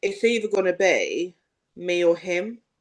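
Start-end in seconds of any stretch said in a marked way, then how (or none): none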